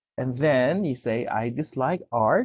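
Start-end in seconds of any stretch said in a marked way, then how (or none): none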